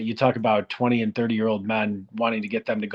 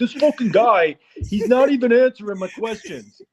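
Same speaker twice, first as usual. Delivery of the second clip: very high, shrill, bad put-on New York accent; 13 semitones higher, 7 dB louder than usual. Imagining a new york reporter at a press conference, in a bad put-on new york accent. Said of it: "Is that the worst New York accent ever?".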